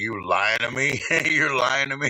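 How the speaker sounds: put-on, mad, confrontational, accusing tone. Retelling confronting people in a store: retelling own angry outburst. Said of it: "I was so mad".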